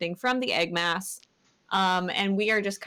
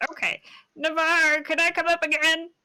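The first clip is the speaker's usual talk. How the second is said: very high put-on egg character voice; 9 semitones higher, 4 dB louder than usual. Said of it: "Egg voice".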